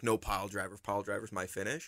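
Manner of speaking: mock stern, insistent tone. Imitating a wrestler at a show meeting: imitating someone being stern. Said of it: "really stern on".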